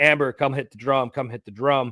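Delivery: ordinary delivery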